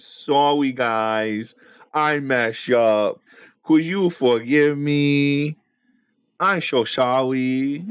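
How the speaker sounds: very slow, desperate pleading, "me" stretched out. Retelling how someone begs everyone to come back: imitating DJ begging desperately. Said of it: "He is so desperate now".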